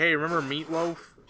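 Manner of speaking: ordinary delivery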